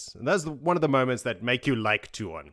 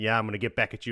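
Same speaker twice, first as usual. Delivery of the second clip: put-on proud, pleased voice. Retelling a book scene, quoting Matt: imitating Matt, acting proud. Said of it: "he's so fucking proud of himself".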